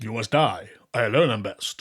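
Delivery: English dub kung fu movie voice. Joining in on the english dubbing voice of a kung fu film: dubbed kung fu film voice. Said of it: "she's the voice going".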